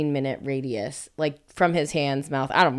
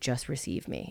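soft, intimate whisper, very close to the ear; 3 semitones lower, 10 dB quieter than usual. Retelling what a partner said into the ear: imitating a whisper. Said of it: "he was whispering in my ear".

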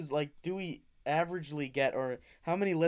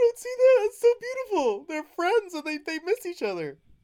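mock choked-up tearful voice, higher and louder; 8 dB louder than usual. Acting out an imagined FBI agent watching the webcams: imitating someone choking up tearfully. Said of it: "choking up and tearing up".

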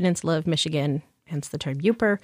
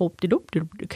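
put-on mock Swedish voice. Showing how the Upper Michigan accent sounds: Swedish Chef voice. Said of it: "it sounds a lot like Swedish Chef".

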